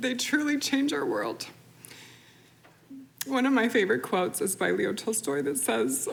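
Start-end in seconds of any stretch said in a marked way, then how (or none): 0.0-1.4 high, choked-up voice, close to tears. A speaker presenting a community kindness initiative, choking up, near tears. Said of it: "Sorry, I'm gonna cry".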